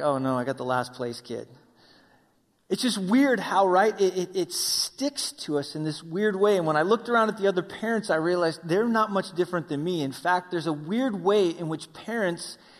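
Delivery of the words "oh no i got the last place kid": put-on sheepish, embarrassed, low muttering voice. A dad describes his son finishing last at BMX, playing the mock-embarrassed dad. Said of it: "I'm that embarrassed dad that's like".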